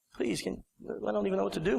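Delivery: soft, sad, mournful pleading, laid on. Retelling his own fake sad plea to a receptionist: imitating his own sad plea. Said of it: "I'm doing the sadness".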